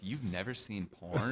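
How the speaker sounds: put-on little voice. Retelling a man's repeated question, imitating him in a little voice. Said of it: "that's the voice I do to let you know".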